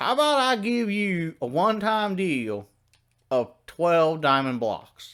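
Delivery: put-on Midwestern accent. Retelling what Fred said while bargaining with you, in Fred's put-on Midwest accent. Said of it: "I also don't know why Fred has a Midwest accent".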